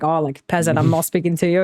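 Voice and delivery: normal talking voice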